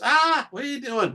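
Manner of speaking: sudden put-on shriek, very high-pitched and shrill. Retelling how a partner reacted to the pantry: imitating someone screaming. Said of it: "All of a sudden she screams".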